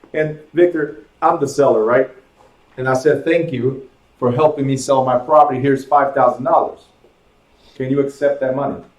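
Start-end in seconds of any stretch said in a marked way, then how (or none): none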